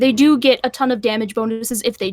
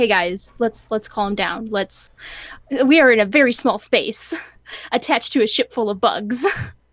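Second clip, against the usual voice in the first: ordinary delivery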